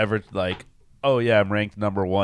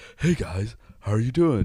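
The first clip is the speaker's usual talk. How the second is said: put-on airy, breathy voice like a kids' TV puppet; 2 semitones higher than usual. Describing how Neil talks to the others, doing a breathy Neil impression. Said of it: "Neil just is very breathy".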